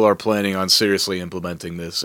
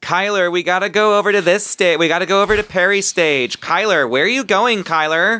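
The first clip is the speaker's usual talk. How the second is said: put-on very high-pitched college party girl calling voice; 13 semitones higher, 4 dB louder than usual. Imitating college-age girls calling after a guy, imitating college party girls. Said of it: "the girls wear crop tops and they go".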